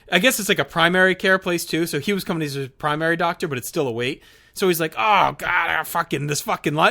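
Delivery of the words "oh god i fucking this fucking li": mock loud outburst. Retelling a stranger barging into a doctor's office: imitating loud swearing. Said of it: "just swearing in front of everyone, like, loudly".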